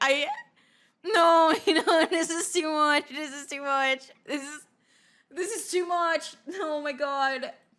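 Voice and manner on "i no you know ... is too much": words broken by uneasy, awkward laughter. Reacting to an awkward story, laughing while talking. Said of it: "When I'm feeling awkward, I start laughing".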